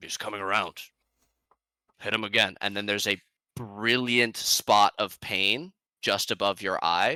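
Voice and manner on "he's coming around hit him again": muffled voice, quieter and faster. Narrating to a player waking up, voicing an unseen speaker in a muffled voice. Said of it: "you hear a muffled voice as your eyes are blinking open say".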